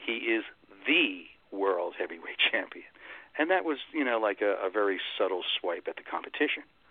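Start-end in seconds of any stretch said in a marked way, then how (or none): 0.0-2.9 strong stress on the word "the". Recalling how he used to announce the champion: strong stress on "the". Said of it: "I always emphasized the word "the."".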